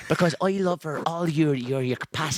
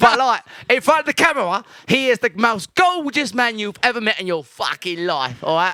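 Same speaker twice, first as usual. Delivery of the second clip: put-on Cockney accent, higher and louder; 8 semitones higher, 8 dB louder than usual. Doing an accent that the other speaker asks for: Cockney accent.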